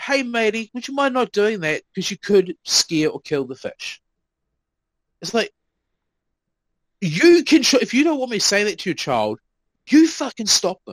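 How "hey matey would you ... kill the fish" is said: easygoing, matey, friendly and polite tone. Retelling asking a child to stop, imitating own friendly tone. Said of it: "that exact tone".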